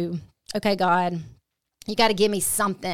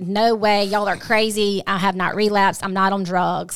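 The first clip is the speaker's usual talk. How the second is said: put-on defensive, protesting tone, louder; 4 dB louder than usual. Retelling how the son denied relapsing: imitating someone defensive. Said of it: "He gets so defensive".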